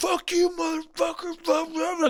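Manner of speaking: put-on very high-pitched cursing yell. Retelling how she woke up yelling at this dude: imitating someone yelling. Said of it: "she just goes back into fucking yelling at this dude".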